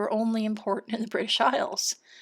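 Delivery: voice giving out, fading into a whisper.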